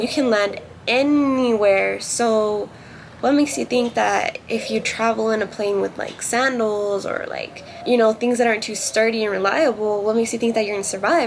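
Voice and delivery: ordinary talk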